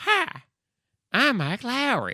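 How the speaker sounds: fake Texan accent, high and swooping pitch. Repeating a movie line to mock how it sounds, put-on texan accent. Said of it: "it's a Texan".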